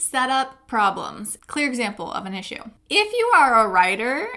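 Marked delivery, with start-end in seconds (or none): 2.9-4.3 loud, high voice cracking mid-phrase. Giving advice to writers in a video, voice cracking. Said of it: "(my voice just cracked)".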